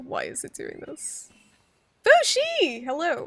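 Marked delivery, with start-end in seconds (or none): 2.1-3.3 loud, high-pitched screaming. Greeting a player who just joined the call: screaming a greeting.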